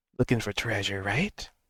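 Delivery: soft, hushed half-whisper under the breath. A player's character sits beside a bound captive and speaks to him, half-whispering. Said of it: "he's like whispering".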